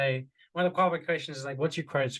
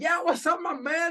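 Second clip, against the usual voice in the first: super hyper, hyped-up delivery pitched way up; 3 dB louder than usual. Show how you adapt to a super hyper person on a sales call, matching a super hyper tone. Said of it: "if they're super hyper".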